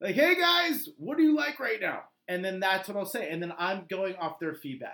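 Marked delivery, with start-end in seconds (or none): 0.1-2.0 very high, loud, half-screamed talking. Showing how to ask farmers' market vendors: scream talking. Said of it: "scream talk".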